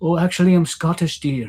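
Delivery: high Scottish woman's voice. Retelling meeting a Scottish lady at the park, voicing her reply like Mrs. Doubtfire. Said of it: "I sound like Missus Doubtfire".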